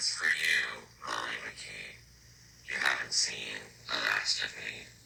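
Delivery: machine-altered voice, very deep, low, soft and hushed. Narrating a scene where the chairman stares at Molly and speaks, voice-modulated chairman voice. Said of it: "I'm going to use a voice modulator to demonstrate what the chairman would sound like".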